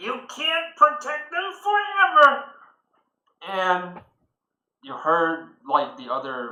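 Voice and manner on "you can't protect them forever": very high, shrill, shrieky voice. A narrator voices one of two fighters clashing blades, in a shrieky voice. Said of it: "a shrieky voice saying".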